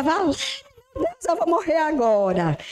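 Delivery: put-on frantic cry of terror, high and rushed. Retelling the car reaching the edge of a dam: retelling terrified cry. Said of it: "eu dizia".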